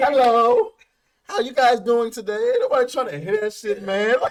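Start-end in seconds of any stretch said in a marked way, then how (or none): 0.0-2.4 loud, fake, put-on formal voice. Show the other person how fake they sound, mocking a fake virtual-interview voice. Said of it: "You sound like you doing like a virtual interview".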